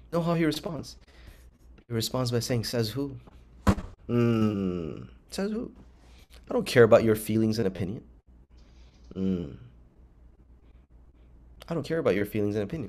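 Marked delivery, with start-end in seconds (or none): 2.6-12.9 acted cool, very composed, calm, with drawn-out "mm". Acting out a Nazi answering a moral argument: imitating a calm, composed reply. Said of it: "Very calmly, very composed".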